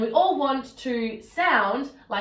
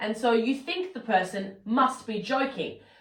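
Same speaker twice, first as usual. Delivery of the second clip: usual speaking voice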